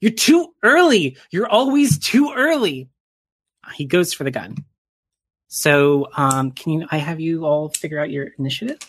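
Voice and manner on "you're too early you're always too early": escalating cry climbing very high, swooping raised voice. Voicing a man pointing at the agents before grabbing a gun: rising, raised voice. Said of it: "His voice rises as he points a finger".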